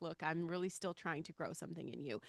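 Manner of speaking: ordinary delivery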